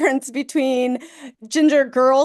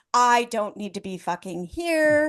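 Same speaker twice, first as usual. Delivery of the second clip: mock fed-up grumbling, quieter; 4 dB quieter than usual. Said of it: "And [name] is just like".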